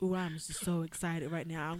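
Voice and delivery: low, flat monotone, same voice throughout, no lift. Mocking people who use the same voice for everything: flat monotone. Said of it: "the people who have the same voice for everything? ... the monotone voices".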